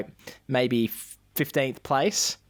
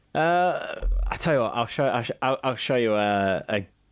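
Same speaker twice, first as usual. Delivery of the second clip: plain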